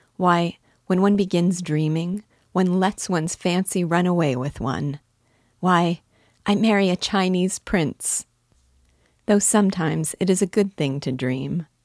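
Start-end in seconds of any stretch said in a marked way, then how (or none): none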